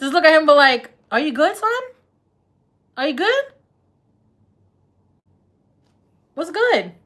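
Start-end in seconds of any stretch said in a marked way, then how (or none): 1.1-6.8 casual, pitched-up New York street speech. Showing how to greet him in New York lingo: New York city lingo. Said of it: "say it just like that".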